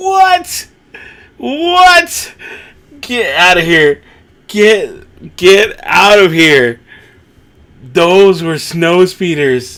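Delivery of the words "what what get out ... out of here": loud yelling, shouting. Watching a scene together with someone, yelling at the screen. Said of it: "I'm yelling at the screen too".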